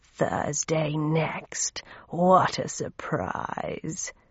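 hushed, low guttural rasp in the throat, whispered. Narrator reads Raum's line in the story: guttural, rasping Raum voice. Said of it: "in a guttural, rasping voice that sounded like a box of rusty nails".

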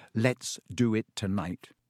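ordinary delivery

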